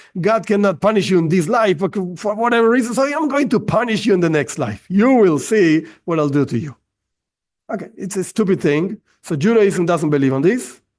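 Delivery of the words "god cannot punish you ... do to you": sarcastic, ironic, tongue-in-cheek threatening voice. Mocking the idea of eternal punishment as God's threat: sarcastic. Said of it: "ironic, sarcastic, of course".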